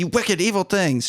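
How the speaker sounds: acted-out furious, high-pitched angry yell. Retelling a movie scene where a character yells at two others: imitating someone yelling angrily. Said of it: "She's yelling at them".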